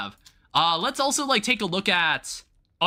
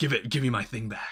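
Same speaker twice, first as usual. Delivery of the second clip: put-on very deep, low, soft ten-year-old voice; 7 semitones lower, 5 dB quieter than usual. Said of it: "deep ten-year-old voice".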